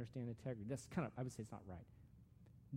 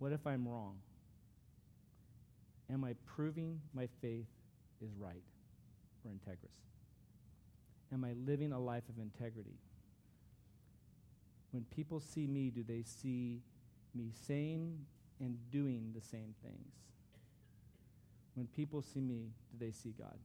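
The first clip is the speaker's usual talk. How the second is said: read slowly with long pauses. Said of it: "I'm gonna read them slowly".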